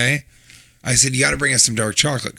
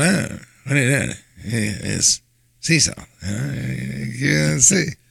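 put-on deadpan comic voice. Riffing on sea salt in products: Norm Macdonald impression. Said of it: "Norm Macdonald going".

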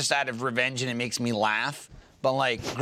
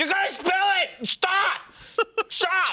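play-acted shrill, very high-pitched yelling scream. Recounting shaking a spoon at a woman gripping it, retelling screaming at her. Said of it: "I'm screaming at her while I'm shaking the spoon".

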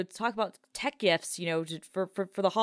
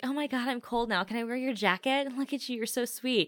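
high, heavily flirtatious gushing voice; 5 semitones higher than usual. Retelling a sketch where the reporter flirts with the anchor: imitating Jill Davenport flirting. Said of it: "all she wants to do is flirt with Colin Jost".

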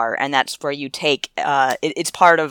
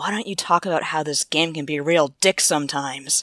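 quiet, seething anger kept under the breath. Recounting what someone said in a meeting about a game, retelling a quiet, seething remark. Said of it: "in this quiet, seething voice".

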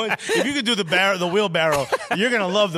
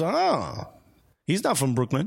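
plain

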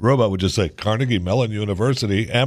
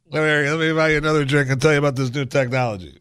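put-on drunk-sounding talk; 4 semitones higher than usual. Playing along with an AI voice demo, drunk Barack Obama voice. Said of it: "that's just Barack drunk".

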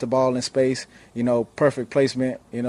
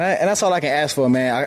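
normal talking voice

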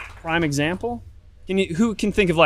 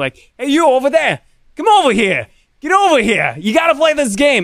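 very high-pitched Brooklyn-New Jersey accent; 9 semitones higher, 7 dB louder than usual. Showing how you call people over to your booth, brooklyn new jersey accent. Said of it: "Brooklyn, New Jersey accent".

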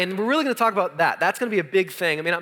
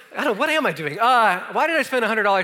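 plain

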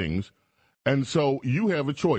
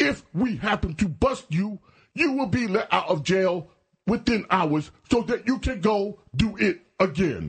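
pitched-up, speechifying big-city mayor voice; 7 semitones higher than usual. Mocking a played clip on crime in the city: Mayor Adams impression. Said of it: "That's a great impression".

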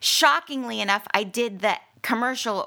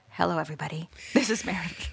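voice pitched to a lower tone; 2 semitones lower, 5 dB quieter than usual. Speaker showing how she sounds after being told to lower her voice, lower-toned voice. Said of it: "lower the tone of your voice".

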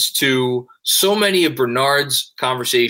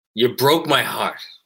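film gangster, mafia boss character voice. Quoting The Godfather Part Two: Michael Corleone impression. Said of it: "That's my best Michael impersonation".

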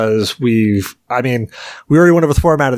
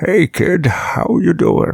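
very slow drawl, every word stretched out, slightly high; 6 semitones higher than usual. Joking about calling someone kid on a deathbed: talking like Deckard Cain. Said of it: "I'll be talking like Deckard Cain".

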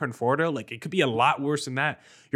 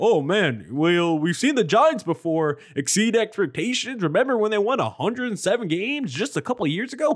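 high, goofy put-on voice, poking fun; 6 semitones higher, 3 dB louder than usual. A speaker mocks people who bring up the Giants' 107-win season: mocking goofy voice. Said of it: "That was my goofy voice".

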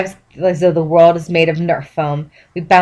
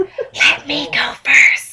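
very slow, hushed, drawn-out whisper; 9 semitones higher than usual. Reading a story aloud, stopping a companion at a dark stair: whispering. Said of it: "'Cause they're whispering".

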